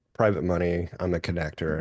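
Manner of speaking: normal talking voice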